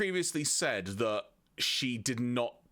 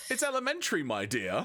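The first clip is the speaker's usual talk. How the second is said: put-on British accent; 4 semitones higher than usual. Reading a detective line in a put-on British accent. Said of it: "and I'm not even British".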